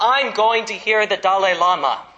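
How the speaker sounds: loud, high voice bursting in, calling out. Retelling bursting through the doorway and announcing to the family, in a loud voice. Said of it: "I said to my family in a loud voice".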